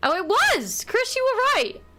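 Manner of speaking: loud excited outburst.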